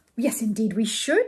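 ordinary delivery

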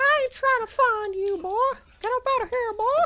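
tiny, squeaky cartoon voice, very high pitched. In a game, answering someone who says he will never be found, Mickey Mouse-like voice. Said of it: "You sound like Mickey Mouse kind of".

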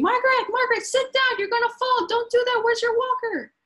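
mock very high scream from far off. Acting out a nurse calling across a dining room: imitating a nurse screaming. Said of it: "the nurse is screaming".

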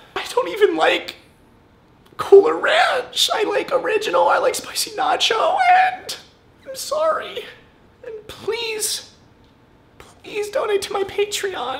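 pretend sobbing. Pretending to cry on camera for a video, fake crying. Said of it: "I want them to think I'm crying".

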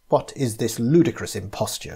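plain reading voice

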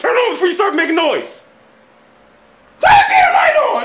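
loud, high, frantic yelling.

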